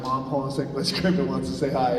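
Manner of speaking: ordinary talk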